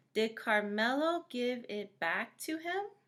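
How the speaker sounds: lilting rise in pitch at the end on him. Showing how a question sounds: rising at the end on 'him'. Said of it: "Notice how my voice kind of went up at the end?".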